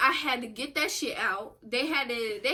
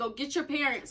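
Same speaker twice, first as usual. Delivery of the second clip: mock urgent, called-out screaming; 4 semitones higher, 5 dB louder than usual. Retelling a dog attack, reenacting screaming at the neighbors' kids. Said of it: "I was screaming".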